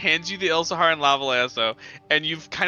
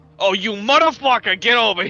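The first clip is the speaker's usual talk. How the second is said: raised, violent, furious angry yell, ready to fight; 5 semitones higher, 6 dB louder than usual. Acting out an NPC who turns violent at once: imitating a violent yell. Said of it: "getting violent. Immediate violence".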